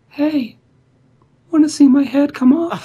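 creepy hushed whisper. Reading a horror story aloud, a whisper in the face: perverted hushed whisper. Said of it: "Perverted, hushed tones".

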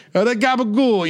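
fake Italian-American accent, bruschetta and gabagool stretched out.

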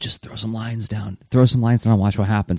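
speaking in a whisper. Retelling leaning over to someone stuck on a blank comic page, whispering. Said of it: "just whispered".

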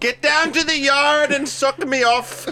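put-on very high, very slow Scottish sailor accent. Imitating a co-host who talks like a sailor: Scottish sailor voice. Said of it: "Scottish sailor".

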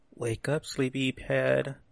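soft, hushed half-whisper, up close. Waking a sleeping character in the game, half-whispering. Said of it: "I walk over to DeSoto and I whisper".

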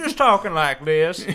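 loud put-on Southern accent. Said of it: "an Albert Einstein type lecturer at a college".

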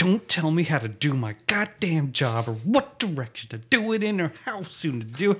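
high, rising, furious rant.

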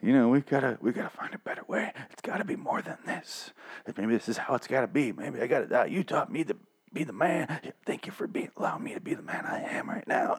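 silly, breathy, whispery, feeble dying voice. Summarizing a TV character's dying speech to his father: stupid impression of dying Carl. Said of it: "a stupid impression".

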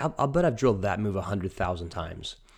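usual speaking voice

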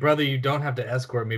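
ordinary talk, nothing marked

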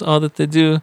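high-pitched, modest, humble put-on voice. Quoting a man who praises Filipino doctors: Manny Pacquiao voice. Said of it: "And he sounded like Manny Pacquiao".

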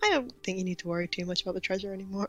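very soft, very quiet, barely-there voice. Recounting how a character answered after the others talked at once, very quietly. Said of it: "very quietly like".

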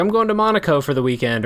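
ordinary talk, nothing marked

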